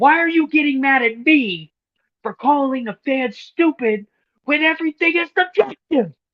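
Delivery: very loud, high, shrill angry ranting. Retelling J D answering Tony Khan's tweet: imitating J D getting mad. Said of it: "I love when he gets mad".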